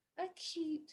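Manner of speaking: put-on very high, babyish little voice. Teaching angle names with different voices: baby voice on 'acute'. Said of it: "like a baby voice".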